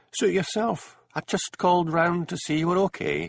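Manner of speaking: very high, sibilant, annoyed hissing voice. Reading a story aloud, a visitor turns to leave: annoyed, sibilant accent. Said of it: "the sudden sibilance of his accent showing he was annoyed".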